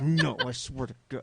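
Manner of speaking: slow, drawn-out, furious angry scream. Acting out raging at a frustrating game: imitating own angry screaming. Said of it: "screaming, like".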